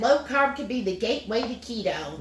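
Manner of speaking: ordinary talk, nothing marked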